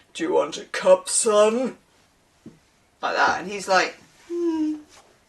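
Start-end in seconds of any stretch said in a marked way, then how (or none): 0.1-1.7 slow, otherworldly, mystical cosmic voice. Describing a tarot card, giving the cosmic candle a very cosmic voice. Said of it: "the cosmic candle have a very cosmic voice".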